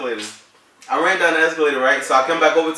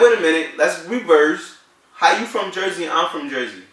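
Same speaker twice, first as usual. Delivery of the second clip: ordinary talk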